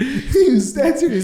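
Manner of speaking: words spoken through laughter.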